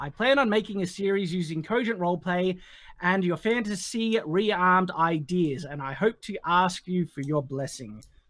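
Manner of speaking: normal talking voice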